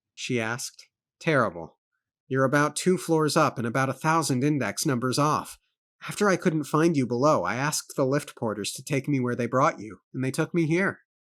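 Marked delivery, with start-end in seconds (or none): none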